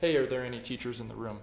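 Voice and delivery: ordinary talk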